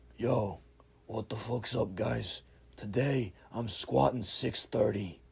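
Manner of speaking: heavily rough, gravelly voice. Retelling how a man greeted everyone before his squat, in a gravelly voice. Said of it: "he has this kind of voice, it's, like, very, like, gravelly".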